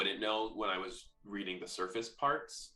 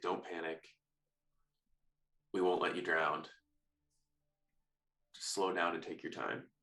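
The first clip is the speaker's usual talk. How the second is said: hushed whisper, lower, quieter and slower; 3 semitones lower, 3 dB quieter than usual. In a game, a character reassures another character before leaving, whispering. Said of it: "I just want to whisper".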